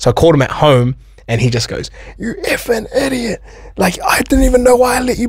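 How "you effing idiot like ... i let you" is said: shrill, very high screaming and yelling rant. Recounting a phone call where the speaker got yelled at, retelling someone yelling. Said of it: "Yelling at me, screaming at me".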